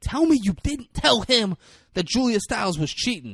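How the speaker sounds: mock very high, loud shouting. Retelling a film scene, quoting the girlfriend: imitating someone yelling. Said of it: "his girlfriend is yelling at him".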